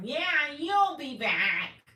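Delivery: very high, loud, sarcastic mock guard voice. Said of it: "And she's like".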